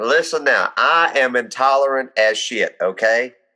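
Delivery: deep, thick, laid-on Southern drawl. Describing a man who announces himself every time, in a deep southern accent. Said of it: "a deep southern accent comes out".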